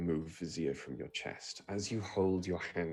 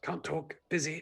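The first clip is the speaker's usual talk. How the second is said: whispering, higher; 9 semitones higher than usual. Voicing a voice heard inside a player's head: whispered. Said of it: "you hear a whispered".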